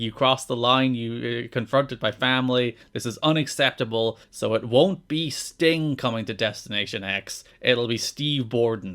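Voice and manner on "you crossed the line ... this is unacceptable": normal talking voice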